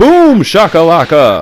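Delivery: excited sports announcer yelling. Describing a spinning uppercut move, imitating the NBA Jam announcer. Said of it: "I can just hear the N B A Jam announcer going".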